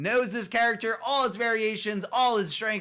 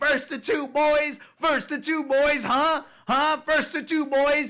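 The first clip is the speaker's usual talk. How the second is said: put-on high, screamed, taunting yell; 5 semitones higher, 3 dB louder than usual. Retelling a player screaming in his beaten opponent's face: retelling a screamed taunt. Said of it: "just keeps screaming".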